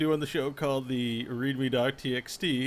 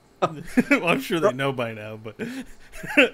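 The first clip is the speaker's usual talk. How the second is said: loud, swooping speech broken up by giggles; 3 semitones higher, 5 dB louder than usual. Announcing sad news about a death, laughing while talking. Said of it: "I gotta stop laughing".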